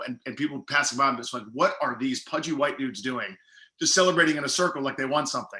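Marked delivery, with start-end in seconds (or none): none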